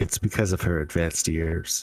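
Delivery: quiet, under the breath, with a chuckle. Voicing a character who leans over and remarks to Gadget: under her breath with a chuckle. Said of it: "laughs to herself a little bit under her breath".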